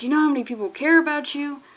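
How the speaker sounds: earnest, heartfelt, begging, pleading tone. Retelling a scene where a character pleads with another person: imitating someone pleading. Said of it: "pleading with him".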